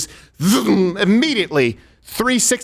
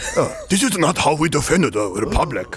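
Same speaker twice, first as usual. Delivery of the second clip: slow put-on Japanese accent; 3 semitones lower than usual. Imitating the Trade Federation aliens from the Star Wars prequels: imitating Trade Federation accent. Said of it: "That's exactly how they sound".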